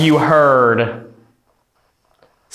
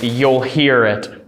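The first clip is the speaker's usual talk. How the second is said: ordinary talk, nothing marked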